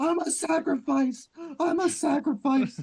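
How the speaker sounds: very high, reckless battle cry yell. Retelling what they yelled to their group mid-chaos: retelling a yell to the group. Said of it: "I start yelling to the group".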